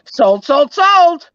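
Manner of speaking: very high, very loud, belted put-on voice. Mid-conversation, saying a line in a Julia from Perfecting Pearls voice. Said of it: "I'm going to say this in the voice of Julia from Perfecting Pearls".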